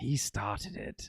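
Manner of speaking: breathy, whispered character voice, near a whisper. Recapping an episode scene and quoting a line: Crosshair voice. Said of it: "that's my Crosshair".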